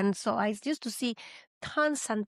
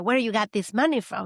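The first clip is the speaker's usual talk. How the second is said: imitated angry tone, louder; 6 dB louder than usual. Retelling how dad reacted on finding the cash: imitating angry dad. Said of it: "he got very pissed off and said".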